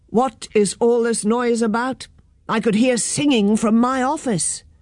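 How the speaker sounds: ordinary delivery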